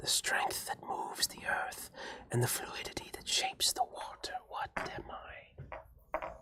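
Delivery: otherworldly, ethereal whisper, very hushed. Posing a riddle as a voice in the listener's head, ethereal voice. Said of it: "an ethereal voice in your head".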